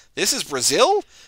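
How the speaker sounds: Brazil lifted with a questioning rising tone. Recalling someone who kept saying it like a question, question rise on 'Brazil'. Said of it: "kept saying like a question".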